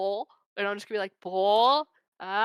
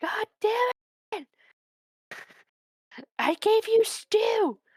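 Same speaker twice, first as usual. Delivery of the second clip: acted yelling, louder and higher; 11 semitones higher than usual. Calling out in character to a missing animal named Onion: yelling louder. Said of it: "I'm gonna yell louder".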